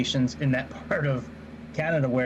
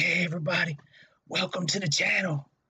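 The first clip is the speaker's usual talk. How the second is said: soft, pitched-up ASMR voice; 5 semitones higher than usual. Telling someone who just arrived what they missed, redoing the channel intro: ASMR voice. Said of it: "I was doing my A S M R voice".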